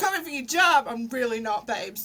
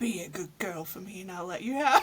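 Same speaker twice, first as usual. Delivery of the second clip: put-on deeper voice, lowered octave, much quieter; 6 semitones lower, 5 dB quieter than usual. Recording a line for a friend, attempting it in a lowered-octave voice. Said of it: "let me just lower me octave a bit".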